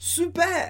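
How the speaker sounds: high-pitched, excited, thrilled super. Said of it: "a amiga do Alain fica empolgada".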